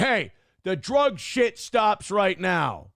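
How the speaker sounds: slow, loud, snapping angry shout.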